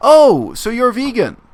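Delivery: loud, bright, very high chirpy voice. Retelling what a girl asked with other people in the room: imitating a loud, chirpy voice. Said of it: "said in a sort of loud, chirpy voice".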